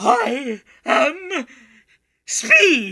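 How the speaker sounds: very loud, high, strange creature-like voice. Narrator voicing a second voice from the back of a dark stable: odd animal-like voice. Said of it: "an odd voice that almost sounds like it's coming from an animal".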